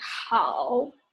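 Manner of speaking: third-tone dip then rise on 好. Practicing third tones, going down then up: dip-then-rise tone on 好. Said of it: "you just go up a little bit after you go down there's a turn like".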